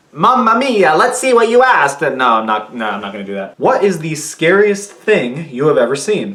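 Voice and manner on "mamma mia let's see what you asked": put-on Italian accent, much higher pitch. Opening a viewer question video, the speaker jokingly reads the intro in a Luigi voice. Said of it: "talking in like a Luigi voice".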